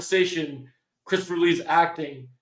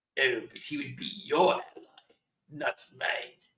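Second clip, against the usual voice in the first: hushed, breathy whispered character voice; 4 semitones lower, 8 dB quieter than usual. Retelling a Star Wars scene where Palpatine gets mad, doing the Palpatine voice. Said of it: "let's see if I can do the voice".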